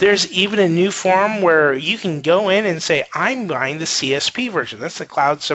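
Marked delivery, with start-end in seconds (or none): none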